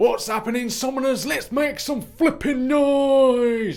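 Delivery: very loud, shrill, high-pitched hyped shout in northern English accent. Greeting the viewers at the start: northern English accent. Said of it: "trying to G you up a little bit in a northern style".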